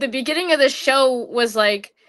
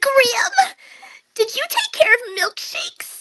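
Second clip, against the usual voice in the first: very high voice, cracking all over, swooping way up; 13 semitones higher than usual. Imitating a cartoon character's voice after praising its voice actor: Billy's cracking voice. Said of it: "his voice is, like, all cracking".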